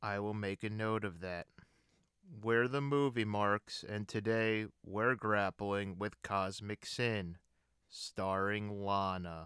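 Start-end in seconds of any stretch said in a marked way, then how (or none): 2.4-9.5 gloomy, low-energy, slower. Podcast hosts redo their intro after being told to tone it down, mopey and downbeat. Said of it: "You sounded like Eeyore".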